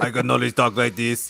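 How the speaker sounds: put-on Austrian accent. Mocking the Terminator's single way of talking: Arnold Schwarzenegger impression. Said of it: "he just uses his crazy Austrian voice".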